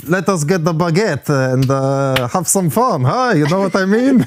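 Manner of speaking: put-on accent slipping into Eastern European. Showing off a French accent to co-hosts, drifting into an Eastern European accent. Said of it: "you went from like French back to like uh, Eastern European".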